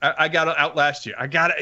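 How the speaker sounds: ordinary delivery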